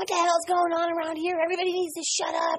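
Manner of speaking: mock ranting, yelling outburst. Speaker recalling their drinking days, acting out their past self yelling. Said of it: "I'm yelling. I'm screaming".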